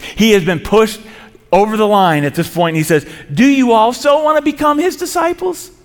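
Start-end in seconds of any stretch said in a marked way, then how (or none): 3.3-5.7 high-pitched, sarcastic jabbing tone. Retelling a healed man's reply to those bullying him: imitating a sarcastic question. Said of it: "you can hear the sarcasm in the man's voice".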